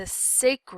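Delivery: ordinary delivery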